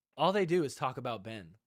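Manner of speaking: ordinary delivery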